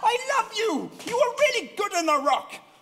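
high, excited, gushing outburst.

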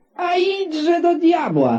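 shouting in anger. The angry mayor answers the stranger who demands his payment: angry shout. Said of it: "Zawołał rozzłoszczony burmistrz".

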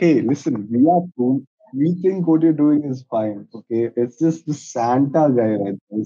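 ordinary delivery

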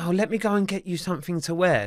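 plain

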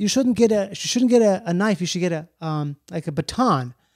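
usual speaking voice

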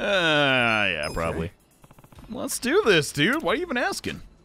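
swooping pitch, drawn-out "yeah". A streamer playing a game, voicing a character: Adachi voice. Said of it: "That's my Adachi voice".

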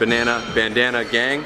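ordinary talk, nothing marked

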